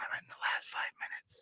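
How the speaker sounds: imitated whisper. Retelling what a man whispered in their ear as they left, retelling a whisper. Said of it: "he whispers in my ear".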